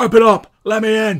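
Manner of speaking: very high, very loud, furious angry yelling. A twi'lek bouncer pounds on the door outside; angry bouncer voice. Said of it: "you hear the angry voice of the Twi'lek bouncer".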